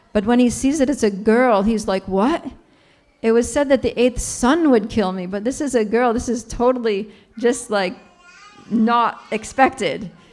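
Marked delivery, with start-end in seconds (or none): none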